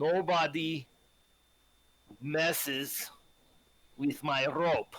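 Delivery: very slow, halting, broken speech, as if barely fluent. Playing a character who speaks Common poorly, telling the elders very slowly. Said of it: "I'm gonna say very slowly in common".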